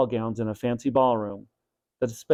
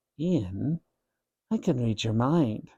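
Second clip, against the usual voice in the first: soft, hushed, half-whispery stage whisper; 5 dB quieter than usual. Doctor Klausman leans over Ian and speaks to him, in a half-whispery voice. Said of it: "he said in a whispery voice".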